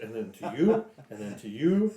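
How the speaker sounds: ordinary talk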